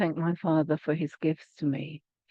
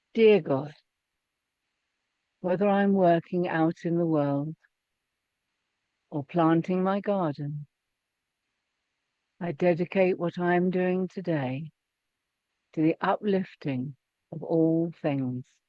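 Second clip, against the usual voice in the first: slow reading with long pauses between phrases. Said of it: "I'm going to read it slowly".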